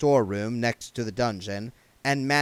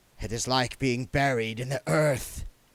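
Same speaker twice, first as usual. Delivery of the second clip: sibilant, hissed. An elf refuses the armor being offered to it: hissing. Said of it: "hissed the elf".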